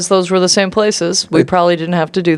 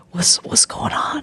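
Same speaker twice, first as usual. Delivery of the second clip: soft, breathy, barely voiced whisper; 5 semitones higher, 7 dB quieter than usual. Speaking in character to the captain at the gate: whispering. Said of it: "I'm gonna whisper to the captain".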